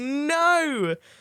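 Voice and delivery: high, loud, panicked cry.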